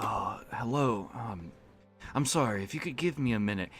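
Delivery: put-on weary, exasperated tone. Retelling a voice done for a game NPC, playing exasperated and tired. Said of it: "this guy's supposed to be exasperated and tired".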